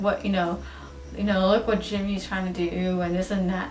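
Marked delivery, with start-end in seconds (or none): none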